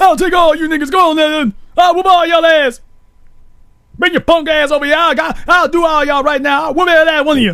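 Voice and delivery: very high, loud, blustering yell. Acting out a guy loudly boasting he will fight everyone: imitating a loud guy yelling threats. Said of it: "Why is he doing all that yelling?".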